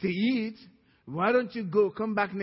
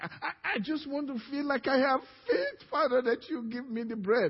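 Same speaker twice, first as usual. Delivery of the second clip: put-on crying, tearful, stammering, pleading voice; 4 semitones higher than usual. Acting out a son on his knees begging his father: acted crying plea. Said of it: "Why are you crying about it?".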